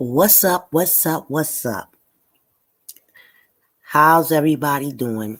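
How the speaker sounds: smooth, silky, slow voice. Opening a live stream, greeting viewers in a smooth voice. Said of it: "trying to get the smooth voice right".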